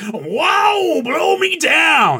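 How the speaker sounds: very high cartoon voice, wow stretched out. Describing Uncle Joey talking like a cartoon sailor, in a Popeye voice. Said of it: "talking in this Popeye voice".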